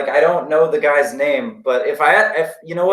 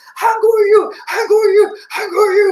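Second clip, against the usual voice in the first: mock frantic, freaked-out excitement, pitched higher; 4 dB louder than usual. Retelling how an older lady at an event was freaking out: imitating someone freaking out. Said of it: "she was, like, freaking out".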